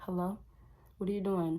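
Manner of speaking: cagey, sketchy, suspicious tone. Acting out how a cheating girlfriend picks up the phone: imitating a sketchy phone pickup. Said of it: "I'm talking like this because this is how she might pick up".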